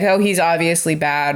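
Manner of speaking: usual speaking voice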